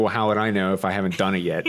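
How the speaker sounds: ordinary delivery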